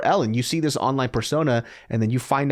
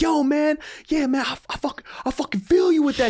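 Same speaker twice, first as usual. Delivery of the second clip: nonstop, very high-pitched, excited screaming. Retelling a meeting with an overexcited fan: imitating a fan screaming. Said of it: "this guy is just screaming nonstop".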